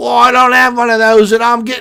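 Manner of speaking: shrill, very high, badly done put-on English accent. Acting out a guy without a wristband trying to get in, horrible english accent. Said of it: "the guy's a horrible English accent".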